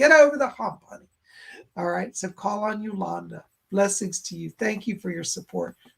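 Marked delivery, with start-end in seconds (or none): 0.0-1.1 strong, broad Southern drawl, raised and high. Quoting a woman's advice the way she says it: big Southern accent. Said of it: "she got a big southern accent. She's like".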